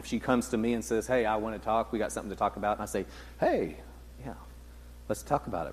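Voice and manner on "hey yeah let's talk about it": soft, breathy, hushed, open accepting tone. Responding when someone says they want to talk: accepting tone. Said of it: "There's also an accepting tone".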